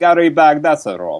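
word pronounced in a put-on Russian accent. Pronouncing a podcast guest's name with a put-on Russian accent. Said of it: "I have to put on the Russian accent".

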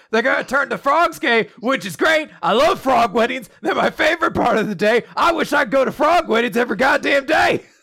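all-out screamed tirade, high pitch. Retelling a speaker as a weirdly open-minded Alex Jones: screaming Alex Jones impression. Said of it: "He's just screaming".

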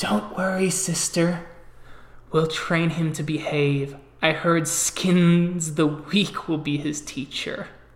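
loud fake stage whisper, one word drawn out. Leaning in and speaking to her sister: fake stage whisper. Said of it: "kind of does a fake whisper".

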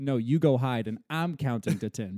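usual speaking voice

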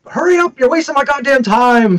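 piercing high-pitched yelling. Retelling a movie scene where Gonzo rushes someone: imitating Gonzo yelling. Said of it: "and he's like".

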